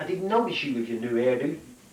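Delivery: ordinary talk, nothing marked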